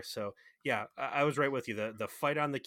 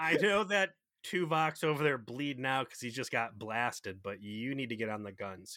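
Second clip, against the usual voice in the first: usual speaking voice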